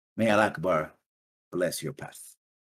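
put-on slight elven accent, clearly spoken. Narrating a character's parting words to the players, slight elven accent. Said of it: "slightly elven accent".

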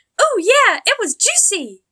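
very high, very loud exclaiming cry. Pinkie Pie, reminded by Twilight of the apple, exclaiming. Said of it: "Pinkie Pie exclaimed after a small hop".

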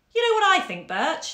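gentle, kind, very high voice. Reading a novel aloud, a colleague speaks to a coworker beside her at the mirror: kindly. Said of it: "Nan had said kindly".

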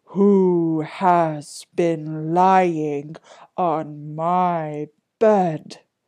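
booming, very slow, drawn-out big bear voice. Reading a fairy tale aloud, voicing the great big bear in his great big voice. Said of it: "he cried out in his great big voice".

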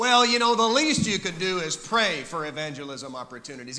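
sarcastic, snarky, dismissive delivery. Acting out a common remark about praying, imitating a snarky tone. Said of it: "we kind of say it with that snarky tone".

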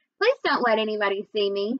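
ordinary delivery

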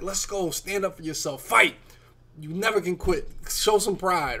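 fired-up, high, loud rallying scream. Recalling a late goal-line stand while far behind, the speaker re-enacts their own yelling. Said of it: "I'm yelling. I'm screaming. I'm like".

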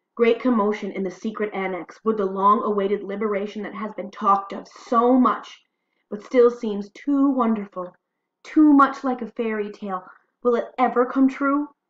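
loud, eager, rising excited voice. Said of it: "you can hear the excitement in her voice".

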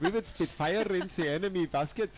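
put-on, fake German accent. Asked which accent they have, answering in a put-on german accent. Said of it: "this is the German accent".

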